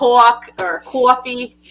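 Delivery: New York pronunciation. Showing how words come out when mad, in a new york accent. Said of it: "my New York accent goes out".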